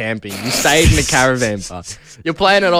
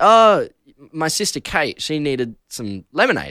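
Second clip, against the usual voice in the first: usual speaking voice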